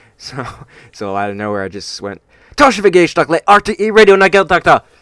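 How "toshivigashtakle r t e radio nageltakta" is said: very loud, very high booming radio announcer delivery. Retelling how you suddenly spoke just like he would on the radio: emphatic, confident imitation of radio voice. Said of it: "just like he would on the radio, ... with so much uh, emphasis and confidence".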